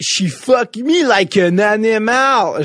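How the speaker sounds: clumsy, bad put-on Québécois accent, very slow, high. Quoting a film line the way Keanu Reeves says it: imitating Keanu Reeves's bad Québécois accent. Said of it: "son accent québécois est à chier".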